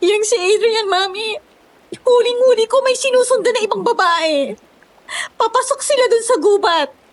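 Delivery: tearful speech broken by sobs. Answering Mami, who asks why she is crying, crying while talking. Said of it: "Ba't ka umiiyak?".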